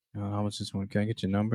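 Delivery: under-the-breath mumble. Acting out a guy approaching a girl without confidence, talking under his breath. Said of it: "talking under his breath".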